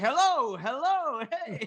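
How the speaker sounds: put-on drunk man voice. Imitating the drunk guy from Father Ted coming on: drunk guy from Father Ted voice. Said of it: "he's like the guy in, in Father Ted, you know, the, the drunk guy".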